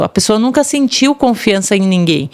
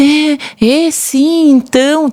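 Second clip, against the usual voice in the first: put-on pitiful poor-me voice, much slower; 5 semitones higher than usual. Describing how people talked when she came near, she does their pitiful victim voice. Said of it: "a voz da, de vítima, da coitada".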